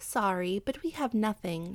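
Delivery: plain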